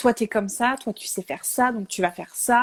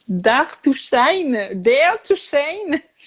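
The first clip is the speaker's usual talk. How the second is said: slow French accent with French vowels; 5 semitones higher, 3 dB louder than usual. A French speaker reads out an English phrase that was written for them: English with a French accent. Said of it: "vous allez excuser mon accent anglais euh, pitoyable".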